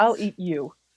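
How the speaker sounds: mock menacing, threatening delivery. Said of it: "Perfectly menacingly".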